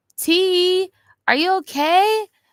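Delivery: showy flamboyant voice, very high and loud. Recalling a friend from a past life and how he sounded, imitating a flamboyant voice. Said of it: "he sounded flamboyant".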